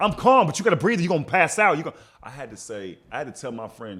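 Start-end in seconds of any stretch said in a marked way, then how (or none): 0.0-2.0 put-on, very shrill, very loud, fast, frantic, panicked pleading. Retelling a friend panicking in the car, urging to breathe: imitating a friend panicking. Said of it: "while she's panicking".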